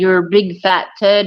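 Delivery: ordinary delivery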